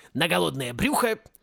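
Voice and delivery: ordinary talk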